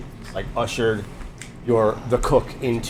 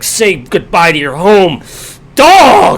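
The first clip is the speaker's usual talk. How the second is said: very loud, drawn-out, hateful, venom-filled voice; 8 semitones higher, 16 dB louder than usual. Describing a small guy being lifted up off the ground, mock vitriolic hatred. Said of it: "talking like the most vitriolic hatred".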